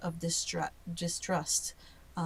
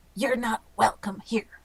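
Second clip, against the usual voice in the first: rough, gruff, unwelcoming, raised voice; 5 semitones higher, 5 dB louder than usual. Narrating guards opening the door on the party, gruff guard voice. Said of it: "you would hear a gruff voice go".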